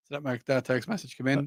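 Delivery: ordinary talk, nothing marked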